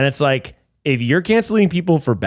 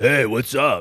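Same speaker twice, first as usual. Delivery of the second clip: put-on voice, sounding half asleep. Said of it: "He kinda sounds like that, right?".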